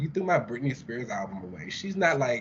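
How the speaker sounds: normal talking voice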